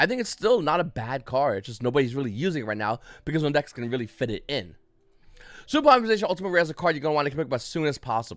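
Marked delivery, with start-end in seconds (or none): 5.7-8.4 words tumbling out very fast, rattled off. Reviewing a card game card for viewers: very fast. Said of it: "I said it really fast".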